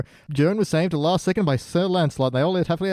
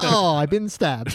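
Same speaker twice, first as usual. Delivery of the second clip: exaggerated, over-the-top, overly English soldier voice; 2 semitones higher than usual. Quoting the english army soldiers from a segment: imitating overly english soldiers. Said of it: "the overly Englishness of the English army".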